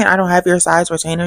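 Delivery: normal talking voice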